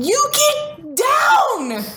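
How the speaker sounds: put-on, very high, all-out child's yell. Parent retelling how one son yelled at his brother, imitating a child yelling. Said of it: "at the very top of his lungs".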